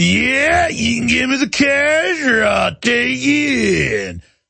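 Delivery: fake Texas accent, "you" stretched. Showing how someone from texas might talk, in a put-on texas accent. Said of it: "Somebody from Texas might be like".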